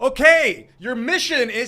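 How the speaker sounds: drawn-out, slow, very loud, high bellow. Retelling a movie scene where a handler gives a secret mission in a bar, retelling a yell. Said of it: "He's yelling it out to".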